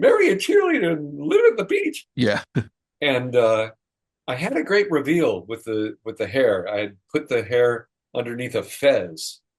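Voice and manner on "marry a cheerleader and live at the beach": very high, swooping buck-toothed voice. Speaker recalls the voice given to a costumed character, talking through buck teeth. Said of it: "talking with buck teeth in is kind of weird, so I kind of gave him a voice like that".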